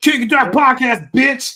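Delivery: booming, very loud, drawn-out stretched shout. Imitating the other speaker yelling in public: imitating someone yelling. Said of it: "What are you yelling?".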